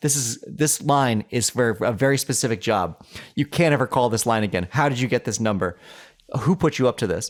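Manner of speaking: ordinary talk, nothing marked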